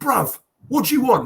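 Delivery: sudden, loud, high-pitched shout. Retelling how a man shouted out at the counter, retelling a shout. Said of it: "he shouts out".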